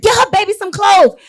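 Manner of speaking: mock shrill yelling, very high pitched. Recounting a chaotic scene, repeating a mother's demand for her baby: retelling a yell. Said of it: "we are screaming and we are yelling".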